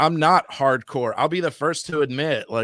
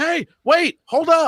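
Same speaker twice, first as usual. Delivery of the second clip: mock, very high, stretched-out, drawn-out yell; 4 dB louder than usual. Retelling how a daughter called out to them at a con: imitating someone yelling. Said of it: "yelling at us".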